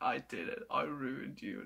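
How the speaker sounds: low, soft, slightly smug gloating. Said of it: "slightly smug smile being like".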